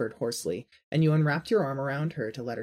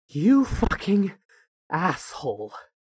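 put-on loud wheezing, winded and panting; 4 semitones higher, 6 dB louder than usual. Narrator reads a panting man's line on reaching your floor, wheezed out. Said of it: "He wheezed out".

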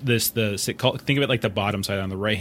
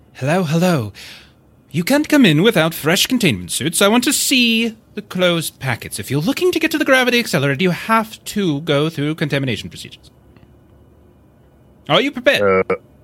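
chipper, sing-song, cheery British announcer voice, raised; 8 semitones higher, 7 dB louder than usual. Speaker retells a voice coming over a speaker, imitating a cheery British voice. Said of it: "kind of cheery British voice".

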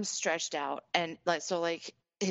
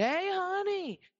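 put-on very high, sloppy drunken slurring; 13 semitones higher than usual. Retelling a drunk man flagging down the waitress: imitating drunk slurring. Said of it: "just slurring his words".

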